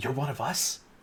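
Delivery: faint, very quiet, barely-there whisper. Game master voicing a woman who leans in toward a player: whispering. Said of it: "leans in and whispers".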